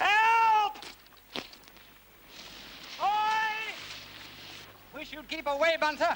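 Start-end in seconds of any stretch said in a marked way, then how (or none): 0.0-3.7 high, far-carrying yell. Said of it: "we'll yell for a bit".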